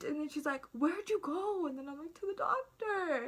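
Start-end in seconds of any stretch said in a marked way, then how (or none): 2.1-3.3 mock crying, high sobbing words. Speaker acting out their past self answering a question, retelling crying while talking. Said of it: "I do this thing where I cry and try to talk".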